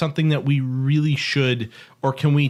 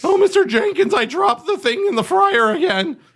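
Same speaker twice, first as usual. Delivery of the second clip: put-on loud, pitched-up cartoon child; 5 dB louder than usual. Improvising a quick character bit after a joke intro, in a Morty voice. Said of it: "Why do you suddenly sound like".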